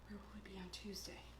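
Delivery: unvoiced, hushed whisper.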